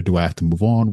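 ordinary talk

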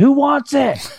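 very high, very slow yell. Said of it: "I just yell into my neighborhood".

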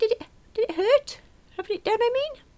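tiny, very high squeaky voice. Narrator, having been unable to speak, finally asks Adam a question, squeaked. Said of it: "I squeaked".

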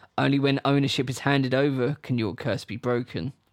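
usual speaking voice

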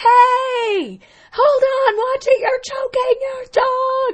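mock very high, very slow yell, long drawn-out hey. Retelling screaming across an ice cream shop at a woman choking her dog: retelling a scream. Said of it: "I screamed across the entire ice cream shop".

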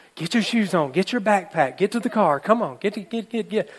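half-yelled, harried, mild yell, acted out. Retelling a story, mother hurrying kids out the door: imitating Jean yelling at the kids. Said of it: "So she's yelling at the kids".

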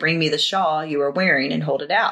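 normal talking voice

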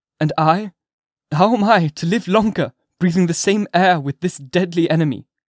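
high, anxious, nervous outcry, shrinking inward. A man, shrinking within himself, responds to the previous speaker: nervous exclamation. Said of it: "exclaimed Arthur Dimmesdale, shrinking within himself and pressing his hand nervously".

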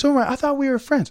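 put-on very high-pitched, whiny child's voice.

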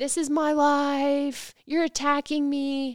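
high, stretched-out put-on scream. Retelling a man's outburst from a video: imitating someone screaming. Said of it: "he starts screaming".

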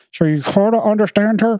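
high-pitched talk pushed through a clenched jaw. Describing a movie character whose jaw is sewn shut, imitating talking through shut jaw. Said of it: "So she talks like this".

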